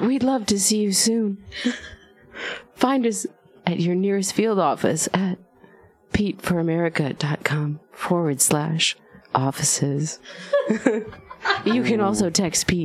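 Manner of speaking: ASMR whisper voice.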